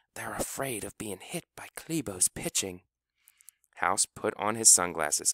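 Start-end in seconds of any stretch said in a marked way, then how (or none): 0.2-2.9 whispering, much quieter. Finesse leans sideways to answer House's question, whispering. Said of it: "leaned sideways and whispered".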